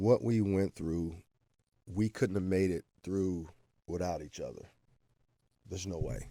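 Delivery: voice welling up with emotion, teary, near tears. Talking about teammates he couldn't have made it without, teary-eyed. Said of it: "I'm getting teary-eyed a little bit".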